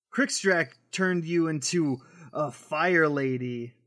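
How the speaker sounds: ordinary delivery, nothing marked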